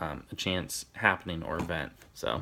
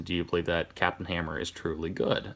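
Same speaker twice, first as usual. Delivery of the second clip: ordinary delivery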